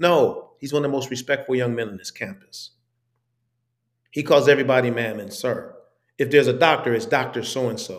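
ordinary talk

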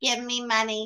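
deliberately stupid-sounding put-on voice. Repeating the convention guest's line mockingly: imitating a stupid voice. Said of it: "And that stupid voice".

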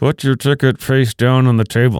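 ventriloquist talk with lips kept still. Retelling a man at the sports book doing his ventriloquist act, lips not moving. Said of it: "he does his best ventriloquist act".

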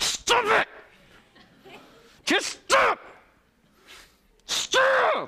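very high, very slow, through clenched teeth. Showing how a parent might talk to a tantruming child: through gritted teeth. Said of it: "Like grated through your teeth".

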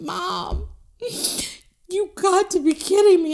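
acted-out tearful, crying, pleading, begging whine. A mother retelling her son's reaction to her, imitating son crying. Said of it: "he's like crying".

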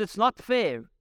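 aggrieved, protesting shout. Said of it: "someone else shouts".

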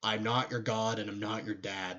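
plain

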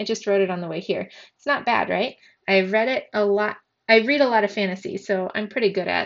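ordinary delivery

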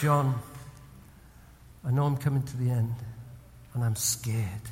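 soft, hushed stage half-whisper. Retelling what a dying man said at his bedside: retelling a half-whisper. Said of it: "he just whispered to me".

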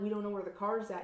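ordinary talk

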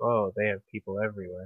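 flat, unemotive delivery. Proposing how both will react while watching, totally deadpan monotone. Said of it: "we have to do it in a totally deadpan, like, monotone".

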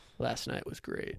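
almost whispering. Showing the creepiest thing to say passing a stranger, almost whispering. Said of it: "I'd get real close and almost whisper".

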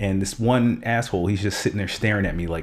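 usual speaking voice

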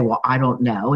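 acted cross, annoyed, angry and short delivery. Retelling what mom said when asked about Daddy: imitating mom's angry reply. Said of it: "she would angrily say".

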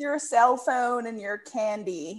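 put-on, fake, very strong American accent. Trying out an American voice after a remark on sounding American, put-on American accent. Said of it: "You sounded very USA".

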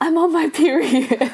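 put-on, high, frantic, freaked-out panicked scream. Retelling a drama scene where a character panics: imitating a scream. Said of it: "and she screams".

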